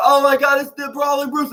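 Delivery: put-on, very high, excited shrieking scream. Retelling a wrestling segment where two wrestlers start screaming: imitating someone screaming. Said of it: "they start screaming like".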